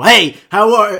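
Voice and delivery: high-pitched yelling at full volume. Speaker explains that a greeting needs no yelling: imitating someone yelling. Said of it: "you don't have to fucking be so".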